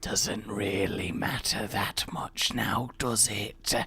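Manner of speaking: slow, menacing, threatening tone, each word weighed. Remarking on having to change rooms, in a threatening voice. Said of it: "in a threatening voice".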